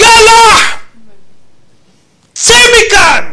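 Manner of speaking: shrill, booming, very loud, high mighty outcry. Retelling how the grandfather cut a man off, retelling a mighty outcry. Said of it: "וזעק זעקה אדירה".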